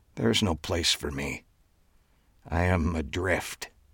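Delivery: very quiet, hushed, faint, barely audible half-whisper. Terry answers the host, as much to himself, in a soft near-half-whisper. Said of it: "and it appeared Terry had been asked if he regretted his work as the cloak conjurer. / he said in a soft voice just above a whisper, / he said in a soft voice just above a whisper, ... and it was clea".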